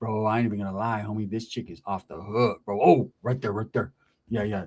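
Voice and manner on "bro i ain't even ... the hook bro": put-on voice of an older homeboy. Retelling a phone call, imitating the older homeboy. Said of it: "And he was like".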